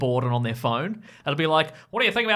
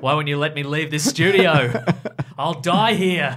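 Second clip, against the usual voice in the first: put-on exhausted, weary late-night radio dj voice; 5 dB louder than usual. Riffing on a late-night radio DJ bit with a co-host, imitating an exhausted radio DJ. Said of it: "it got really exhausted really quickly".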